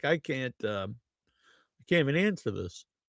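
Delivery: fake, all choked-up voice. Joking that a question left Stevie unable to answer: mock choked-up voice imitating Stevie. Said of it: "Stevie's all choked up. He's like".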